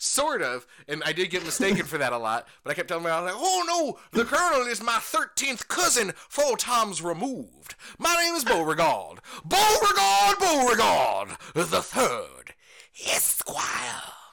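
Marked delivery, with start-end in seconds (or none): 3.4-14.0 high, loud, big, swooping character voice. Retelling what he kept telling his mom while in character: Beauregard character voice. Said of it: "And that voice is great".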